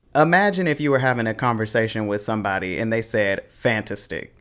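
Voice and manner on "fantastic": wrong stress on fantastic, quieter. Teaching word stress, showing a mispronunciation in conversation, wrong stress on fantastic. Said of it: "You'd be like".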